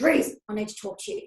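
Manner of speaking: put-on gruff, rough voice. Host retelling a phone call back to Duncan, Duncan's really gruff voice. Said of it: "it was in a really gruff voice".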